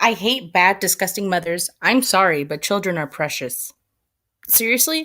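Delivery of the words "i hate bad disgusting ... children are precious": usual speaking voice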